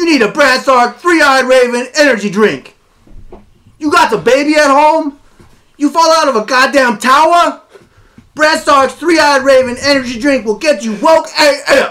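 very high, shouted, yelling voice. Doing a sponsor read for an energy drink on a podcast, yelling. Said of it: "Why are you yelling?".

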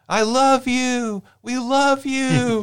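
very high, slow, drawn-out shouting. Recounting a woman a few rows back at a show, imitating her shouting. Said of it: "she's just shouting".

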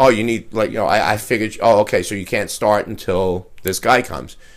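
plain

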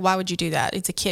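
ordinary delivery

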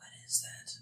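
very quiet, barely voiced whisper. Asking a companion in character about a strange creature: whispering quietly. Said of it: "whisper quietly".

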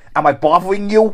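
put-on semi-Cockney Australian accent. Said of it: "semi-Cockney Australian guy that goes".

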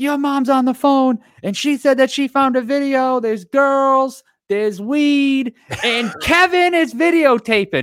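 put-on, very high, slow, deliberate, alarmed freaking-out voice. Retelling mom telling the cousin about a found video, imitating mom freaking out. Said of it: "she's freaking out".

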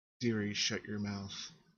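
sugary, sweet-toned voice. The game narrator voices a sudden unseen speaker on the stairs, sweet voice. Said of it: "a sweet voice suddenly says".

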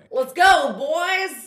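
loud Texas twang, pitched high. Asked by the other speaker for a good texas twang: texas twang. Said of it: "give me your good Texas twang".

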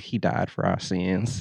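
put-on a little Southern accent. Quoting how she said it, in a slight Southern accent. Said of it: "a little Die Southern accent".

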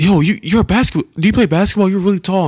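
put-on high, loud, eager kid voice. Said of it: "He was like".

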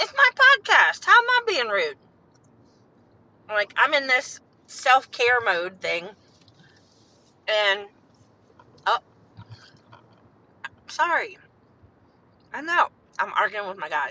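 speaking with mouth full. Host speaking on her own podcast, talking while chewing. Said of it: "I'm chewing".

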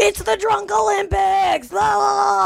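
screaming host voice, high, slow and shouted.

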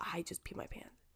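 whispered, barely voiced.

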